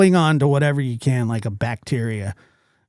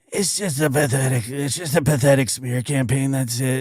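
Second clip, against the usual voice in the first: put-on sexy voice. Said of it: "That's her sexy voice right there".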